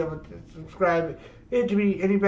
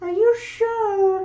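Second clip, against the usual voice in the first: put-on girlish voice, very high; 14 semitones higher, 4 dB louder than usual. Reading aloud, voicing a character's line in a put-on girl voice. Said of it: "I can do a good enough girl voice".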